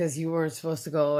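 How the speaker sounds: normal talking voice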